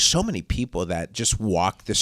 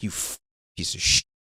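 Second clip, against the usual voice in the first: put-on muttering under breath, lower; 3 semitones lower, 3 dB quieter than usual. Retelling cursing a guy who got ice cream: imitating cursing under breath. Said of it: "cursing him under my breath".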